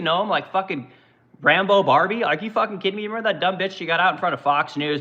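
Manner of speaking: ordinary talk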